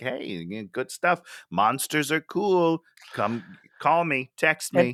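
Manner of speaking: slow, teasing, tempting, tantalizing flirtatious voice. Acting out how to leave someone wanting more: tantalizing flirty voice. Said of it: "You wanna be tantalizing".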